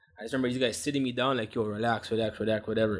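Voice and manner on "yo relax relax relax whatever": plain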